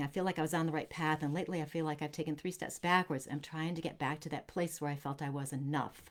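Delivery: normal talking voice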